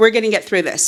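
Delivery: ordinary delivery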